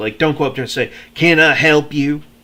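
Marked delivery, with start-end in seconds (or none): 1.1-2.2 curt, loud, slow, with attitude. Showing how not to ask someone if they need help, with attitude. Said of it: "don't don't do it with attitude".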